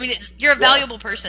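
plain

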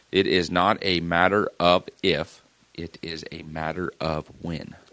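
super slow, careful, word by word. Speaker shows how they must say a phrase to get it right: super slow. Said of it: "unless I say it super slow".

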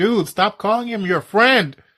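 exasperated, fed-up screaming yell. Retelling a reaction to the RFK thing: retelling own screaming.

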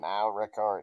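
put-on recording announcement voice. Asked by the others to say the bot's line: imitating the Craig recording bot. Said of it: "Can you say that for us?".

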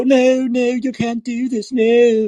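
high, mock protesting voice. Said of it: "liberals will go".

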